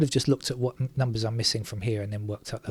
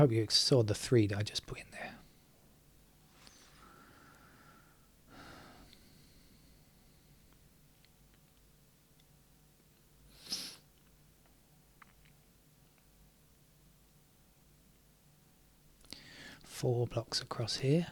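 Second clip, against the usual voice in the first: hushed whisper, quieter; 7 dB quieter than usual. Explaining how the next number is found, whispering. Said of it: "that's all I can produce today, a whisper".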